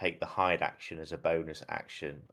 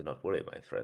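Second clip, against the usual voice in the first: soft, hushed whisper, close to the ear; 2 semitones lower, 5 dB quieter than usual. Voicing a character who appears behind an ally to reassure him: whispering in character. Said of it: "whisper to him and go".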